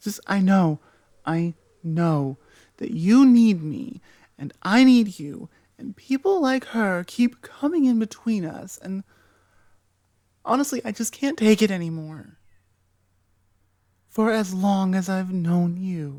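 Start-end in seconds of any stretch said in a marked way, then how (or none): 0.0-12.4 toxic, controlling, obsessive yandere voice. The listener's best friend in an asmr roleplay, an obsessive yandere best friend. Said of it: "[F4A] Your Best Friend Goes YANDERE [ASMR][Toxic][Deceptive][Obsessive][Controlling][Friends to ???] (uploaded 2025) / I have been your best friend waiting for you to wake up and realize that I have b".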